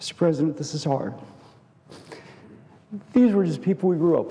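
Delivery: openly emotional, rushed speech. Address mister president about people you grew up with, your neighbors, emotional. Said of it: "I apologize for being emotional".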